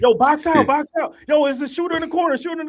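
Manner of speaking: very high, very loud, full-volume yelling. Describing watching a game, the speaker acts out retelling yelling at the TV. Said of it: "but I'm yelling".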